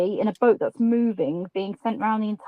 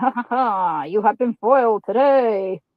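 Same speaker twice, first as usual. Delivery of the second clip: put-on, mad, maniacal pirate cackle. Retelling holding up the squeegee to the others, mock maniacal pirate laugh. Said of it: "laughing like a maniacal pirate".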